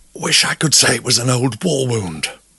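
gasping out words. Sinclair, caught by the man as a cramp seizes him, gasping. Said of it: "gasped Sinclair".

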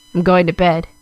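gruff, low voice. Reading a story aloud, a character leaving abruptly: gruff, low voice. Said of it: "they said gruffly in a low voice".

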